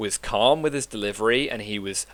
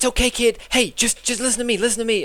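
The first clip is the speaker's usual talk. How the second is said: very high, flustered, panicky hero voice; 13 semitones higher than usual. Imagining Tom Holland's Spider-Man calming a kid: imitating Tom Holland's Spider-Man, higher tone. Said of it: "higher kind of tone".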